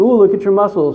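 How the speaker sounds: plain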